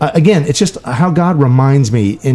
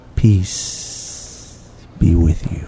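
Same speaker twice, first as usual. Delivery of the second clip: mock hushed, very slow, serene whisper; 7 semitones lower, 6 dB quieter than usual. Speaker imitates the bishop greeting each confirmand; imitating a peaceful voice. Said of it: "in this peaceful voice".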